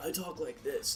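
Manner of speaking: easygoing surfer dude voice, close to everyday speech. Answering which character, showing the bard's voice: Mundos surfer dude voice. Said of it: "Mundos was the".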